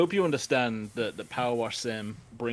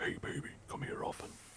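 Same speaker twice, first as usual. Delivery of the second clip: hushed, deep-voiced whisper. Speaking right into the microphone as a joke, deep whisper. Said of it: "whispering a deep voice would be funny".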